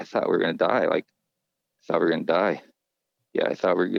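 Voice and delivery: mock dazed muttering. Retelling how a boy repeated words in a daze: imitating someone muttering under breath. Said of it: "about three or four times under his breath".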